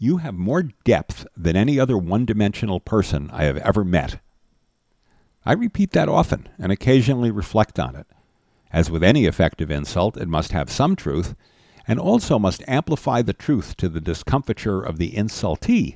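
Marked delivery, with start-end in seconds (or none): none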